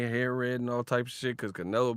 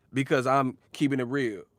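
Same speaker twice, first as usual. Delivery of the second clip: ordinary delivery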